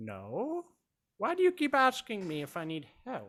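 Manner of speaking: put-on high, frail, decrepit elderly woman's voice. An old woman making sandwiches answers a guest who offers help, frail old woman voice. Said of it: "She's very old, decrepit. / She's very old, decrepit. Probably shouldn't be working. / an older woman approaches the group. / yeah, like she's pushing maybe, like 60, 65. / You guys have seen her behi".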